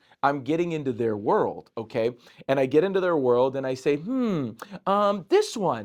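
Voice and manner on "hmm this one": put-on silly childlike voice, high sing-song, very slow. Retelling playing with children, answering their question: put-on childlike voice. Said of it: "And my voice changes and my mannerisms change".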